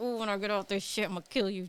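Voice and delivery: muttering quietly under the breath. Retelling own past words from a relationship: imitating muttering under breath. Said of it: "I was under my breath".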